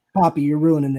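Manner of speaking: mock deadpan delivery. Retelling a wrestler's reply in a backstage segment: imitating MJF's deadpan delivery. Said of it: "M J F deadpan looks at him".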